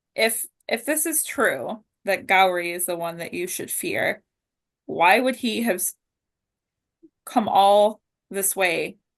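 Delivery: ordinary delivery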